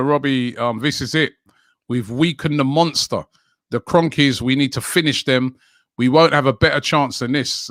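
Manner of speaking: ordinary delivery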